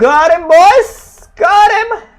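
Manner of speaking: high-pitched excited shouting. Celebrating to the boys after getting him, in high-pitched excited shouting. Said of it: "I'm shouting like a freaking girl".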